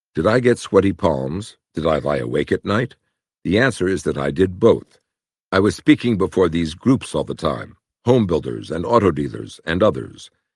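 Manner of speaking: plain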